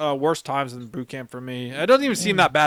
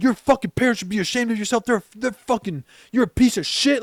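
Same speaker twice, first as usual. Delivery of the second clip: put-on drill sergeant voice, fast, screaming; 8 semitones higher than usual. Retelling how drill instructors berated him, the speaker quotes one: imitating a screaming drill instructor. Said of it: "all three of them now are screaming at me".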